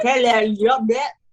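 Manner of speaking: loud, poorly done Cockney accent. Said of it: "That's why I don't try the accent".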